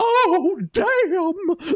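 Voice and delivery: put-on voice of a ninety-year-old woman. Retelling a badly dubbed movie line, imitating a ninety-year-old woman's voice. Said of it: "sounds like a ninety-year-old woman who's like".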